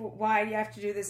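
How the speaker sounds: usual speaking voice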